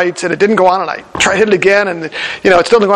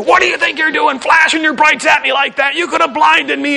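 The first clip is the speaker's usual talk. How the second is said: put-on furious, livid, raised ranting voice; 8 semitones higher than usual. Retelling being pulled over, voicing the policeman, retelling a livid officer. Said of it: "he was just livid, raising his voice at me".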